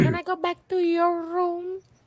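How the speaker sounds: high, flirty woman's voice. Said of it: "she was like".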